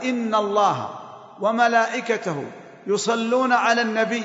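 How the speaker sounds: plain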